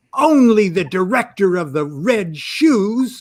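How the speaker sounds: jaded, cynical little put-down tone. Telling a Hollywood story, the speaker quotes Kenneth Anger, imitating him mock-cynically. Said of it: "in his most cynical little voice".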